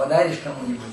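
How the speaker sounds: normal talking voice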